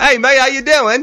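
put-on cheesy English accent. Retelling greeting someone on a trip to England: corny English accent. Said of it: "I did the corny English accent".

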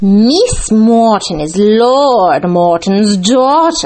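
loud, slow, bitter put-on voice, Lord drawn out. Reading a story aloud, voicing a character's retort: Mrs. Ferrers impression. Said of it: "my spot-on impression of Mrs. Ferrers".

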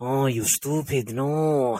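really bad, very slow, drawn-out character voice. Describing a cartoon character's voice: bad Peter Lorre impression. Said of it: "a really, really bad impression of Peter Lorre".

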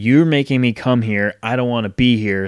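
ordinary talk

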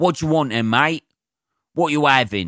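put-on Cockney accent. Recalling someone who came over and spoke to them: Cockney accent. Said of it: "In a fucking Cockney accent".

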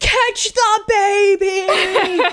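imitated screaming. Retelling others drunkenly screaming at the screen: imitating screaming at the screen. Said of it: "screaming at the screen".

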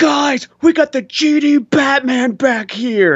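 very high, very slow, drawn-out screaming. Retelling what a firefighter called to the others: imitating a firefighter screaming. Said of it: "the firefighter just screams out and goes".

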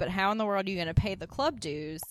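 ordinary talk, nothing marked

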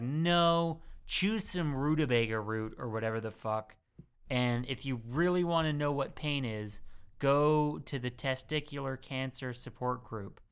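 ordinary talk

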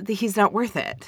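ordinary delivery

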